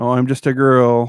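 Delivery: loud, flat, bone-dry deadpan delivery. Giving a sample of the tone, in a really dry tone. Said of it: "in a really dry tone".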